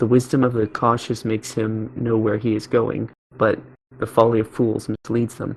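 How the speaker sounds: usual speaking voice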